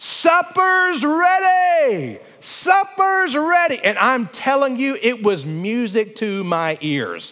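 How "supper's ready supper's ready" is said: high, slow, drawn-out screaming call. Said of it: "she would scream out loud".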